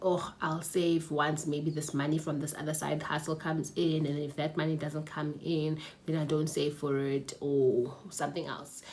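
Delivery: ordinary delivery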